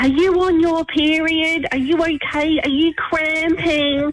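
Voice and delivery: acted-out yell. Recounting her daughter at the shop checkout, retelling a yell. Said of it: "she yelled out".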